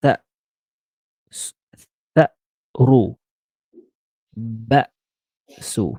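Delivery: slow, deliberate glottal catch in tha'ru and ba'su. Teaching a learner to pronounce a word, showing how to say it slowly. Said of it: "You can say it slowly".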